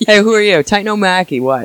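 loud Irish bouncer voice, called out. Riffing on a titan's name in conversation, Titan O'Mackey Irish bouncer voice. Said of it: "sounds like an Irish guy who's bouncing tonight".

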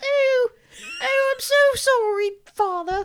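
voice way up in falsetto. Showing how the character talks in the film: high-pitched Leatherface voice. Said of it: "This is Leatherface's voice".

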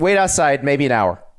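ordinary talk, nothing marked

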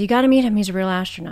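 normal talking voice

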